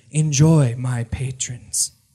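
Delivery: feminine, womanly voice. Narrating to the players as a voice enters their heads, feminine voice. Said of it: "a feminine voice says".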